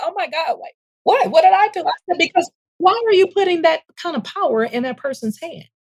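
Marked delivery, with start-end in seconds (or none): 0.0-1.8 shocked, startled, taken-aback disbelief. Speaker retells the supervisor's reaction to hearing she's angry; imitating a shocked reaction. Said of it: "And she was shocked".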